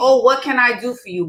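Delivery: mock pleading, begging voice. Retelling how men on the street ask for a date: imitating men begging.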